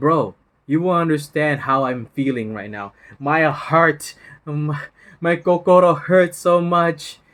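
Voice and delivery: loud, heartbroken, woe-is-me complaining lament. Imitating people complaining about a breakup: mock heartbroken complaining. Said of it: "people will say this to me".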